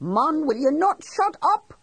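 very high, climbing, exasperated frustrated yell. Reading a tense scene where a man yells at a companion: a high, frustrated yell. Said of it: "yelled at him in a high, frustrated sort of voice".

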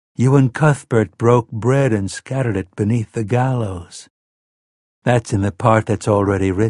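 ordinary delivery

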